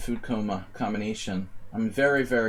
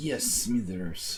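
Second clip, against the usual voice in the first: put-on voice with a slight Slavic accent; 4 dB quieter than usual. During chess commentary, Mr. Burns voice drifting slightly Slavic. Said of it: "My Mister Burns started to sound kind of Slavic there".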